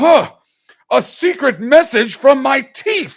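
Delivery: shrill, very loud, drawn-out, slow, high delivery. Retelling a restaurant scene where he gets a fortune cookie: imitating the Tick. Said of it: "all of a sudden he goes".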